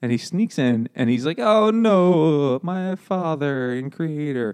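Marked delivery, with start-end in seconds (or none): 1.4-4.5 very slow, pitched-up fake Italian accent. Player describing a character sneaking in, speaking in a mock italian accent. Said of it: "He's Italian?".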